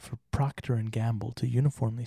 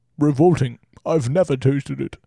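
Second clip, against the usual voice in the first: louder put-on old British director voice; 2 semitones higher, 11 dB louder than usual. Reading out a quote from an interview: Alfred Hitchcock voice. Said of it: "did you like my Alfred Hitchcock voice?".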